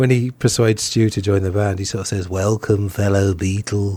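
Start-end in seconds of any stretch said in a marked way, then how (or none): 2.3-4.0 slow, drawled, very weird voice. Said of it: "John has this very strange voice".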